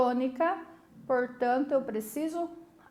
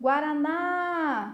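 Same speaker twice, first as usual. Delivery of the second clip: called-out guaraná, stressed on final ná; 3 semitones higher than usual. Portuguese lesson testing whether guaraná is oxítona: called out, stress on last syllable ná. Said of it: "Puxei aonde? Na última sílaba, no na".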